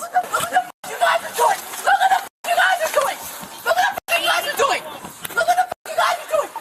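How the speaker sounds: shouting. Yelling at police as her son rams a car: yelling at police. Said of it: "she's yelling at the cops".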